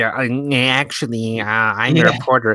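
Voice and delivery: nerdy, high, slow voice. Describing a movie scene, imitating an actor's nerdy reporter voice: imitating Harrison Ford's nerdy voice. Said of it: "I love him doing the fucking nerdy".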